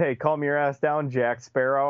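ordinary delivery

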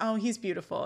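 plain

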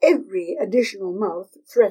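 ordinary delivery, nothing marked

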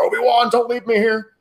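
very high, loud, anguished, desperate scream. Retelling a movie scene, imitating Anakin screaming after someone leaving. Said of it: "when he's screaming after him".

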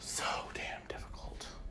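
soft, unvoiced whisper.

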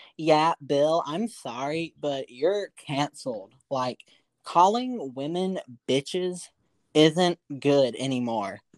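slow female commentator voice. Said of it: "I'm gonna do this impression of how she probably sounded".

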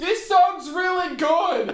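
high, slow, loud shout. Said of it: "I didn't realize I was that loud".

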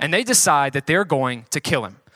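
ordinary delivery

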